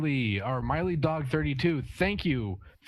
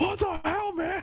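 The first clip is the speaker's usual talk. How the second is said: much higher, exasperated yell. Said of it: "We're kinda yelling at each other".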